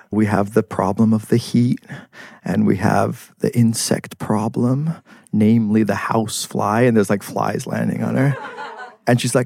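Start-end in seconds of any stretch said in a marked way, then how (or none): 0.1-6.8 put-on very deadpan, dry, flat monotone old-lady voice. Quoting a little old lady from a John Waters documentary, in a very deadpan voice. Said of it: "talking in this very deadpan voice".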